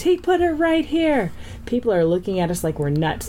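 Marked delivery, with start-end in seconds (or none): 0.0-1.3 very high-pitched, acted-out shriek. Speaker retells Sanfilippo pointing to a stack of mayonnaise jars: retelling a scream.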